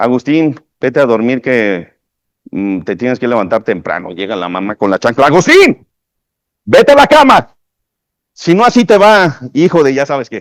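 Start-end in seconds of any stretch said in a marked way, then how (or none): 5.3-10.4 loud, high, scolding mother voice. Demonstrating vocal intention, a mother with a sandal sends her son to bed: scolding. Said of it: "regañan al niño".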